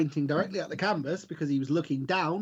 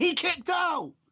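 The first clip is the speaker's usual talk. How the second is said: sports commentator voice, pitched very high; 14 semitones higher than usual. Retelling how the commentators called a botched finish: imitating the commentators. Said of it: "you could hear the commentators over the top going".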